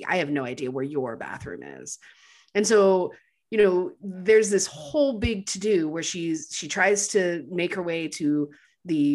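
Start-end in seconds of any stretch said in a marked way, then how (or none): 0.1-2.0 icy, low, cold, calculating tone. Retelling how a woman on the phone answered a question, imitating a cold, calculating voice. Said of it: "in this really cold, calculating voice says".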